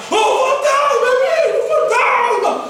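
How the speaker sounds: high, loud scream in terror. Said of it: "E começam a gritar".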